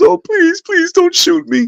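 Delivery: mock tearful crying, very high pitched. Retelling how a woman dropped to her knees and begged, imitating tearful pleading. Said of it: "So she she cried".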